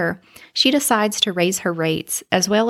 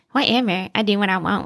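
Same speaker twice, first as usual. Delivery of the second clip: put-on cartoon kid voice. Podcast host imagining a cartoon character saying the episode's phrase, in a Cartman voice. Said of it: "hopefully with a better impression".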